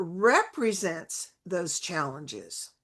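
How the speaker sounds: slow, careful, deliberate reading. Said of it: "and I'll read it slowly".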